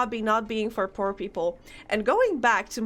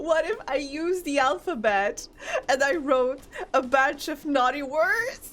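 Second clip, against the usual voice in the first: words squeezed through teary laughter; 4 semitones higher than usual. Speaker shares an idea mid-story, laughing to tears. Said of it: "I'm laughing, crying".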